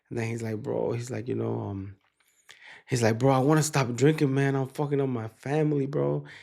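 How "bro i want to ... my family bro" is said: mock weepy, tearful crying voice. Retelling a client's phone call asking for help: imitating a crying client. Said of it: "And then I hear him kinda, like, crying".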